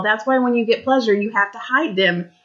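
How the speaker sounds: plain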